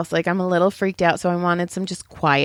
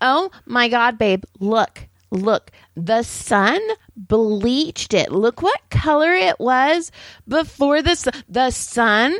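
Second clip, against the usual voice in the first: slow woman's voice, words stretched long; 4 semitones higher than usual. Retelling a stranger in a parked car: imitating a woman talking loudly. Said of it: "And she was like".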